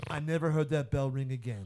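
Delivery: put-on Italian-American accent. Retelling a movie scene, quoting the cop's lines: Steven Seagal's put-on Italian accent.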